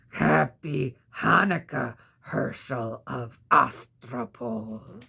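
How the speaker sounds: low, creaky, bone-cracking goblin voice. A horrible voice greets a man who has just sat up from sleep, like cracking bones. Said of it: "a voice that sounded like the cracking of bones".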